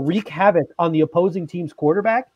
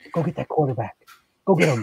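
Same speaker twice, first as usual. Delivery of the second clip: hushed, close stage half-whisper; 4 semitones lower than usual. Imagining a coach half-whispering to a player before he goes in: acting out a half-whisper. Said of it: "Leslie Frazier's gonna whisper in his ear".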